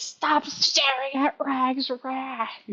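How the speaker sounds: high, slowly stretched outcry. Voicing a guy running out of an alleyway at the players: screaming. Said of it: "starts running out of an alleyway screaming".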